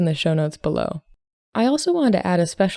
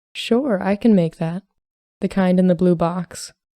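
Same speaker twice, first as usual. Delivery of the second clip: plain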